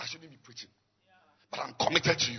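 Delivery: low, hoarse, nearly lost voice. A preacher tells his listeners he is preaching despite losing his voice, hoarse voice. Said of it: "Even I've lost my voice".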